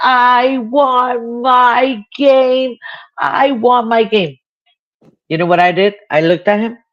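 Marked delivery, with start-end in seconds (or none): 0.0-4.4 put-on high, very slow, stretched-out tantrum scream. Retelling a child's tantrum on the Walmart floor, imitating a child screaming. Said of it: "started screaming on the middle".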